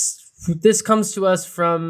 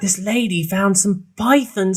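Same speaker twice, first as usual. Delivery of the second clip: clumsy, failed put-on Australian accent; 3 semitones higher than usual. Retelling a video of an excited guy called to find pythons, attempted Australian accent. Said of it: "I can't do an Australian accent".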